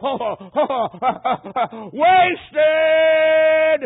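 very loud, high-pitched scream of pain. Retelling a dying man crying toward heaven: imitating a scream. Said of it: "he just screamed out".

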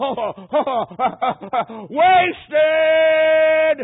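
high, very loud screamed cry. Retelling a dying man crying out toward heaven: imitating a scream. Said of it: "he just screamed out".

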